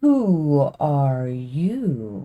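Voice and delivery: languid, sleepy, drowsy, drawn-out "you". Narrator reading the caterpillar's first question to Alice, in a languid, sleepy voice. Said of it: "addressed her in a languid, sleepy voice".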